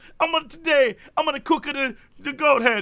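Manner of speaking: put-on old man voice with Italian accent. Retelling a video of a cook serving goat head: imitating an old Italian man. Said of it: "this one old Italian man who's just like".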